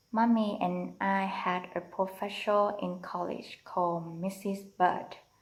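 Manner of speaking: plain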